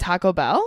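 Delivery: rising question-like pitch on Bell. Showing how the speaker always says Taco Bell, with a question rise on Bell. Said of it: "I pronounce it like it's a question".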